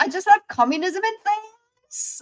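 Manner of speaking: put-on high-pitched valley girl accent. Quote a favorite thing he says when doing american accents, in a put-on valley girl accent. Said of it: "we just become valley girls".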